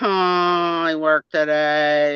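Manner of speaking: slow, unhurried delivery, the I stretched long. Doing a parody of a person for another speaker: imitating Angela Marksberry. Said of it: "Angela Marksberry is like".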